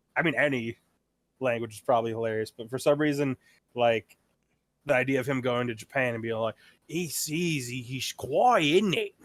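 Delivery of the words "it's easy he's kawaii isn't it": put-on really strong Australian accent, slow. Imitating Steve Irwin in Japan, Steve Irwin impression with strong Australian accent. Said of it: "a really strong Australian accent".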